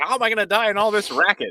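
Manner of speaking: high-pitched, loud speech while laughing through it. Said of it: "she's like".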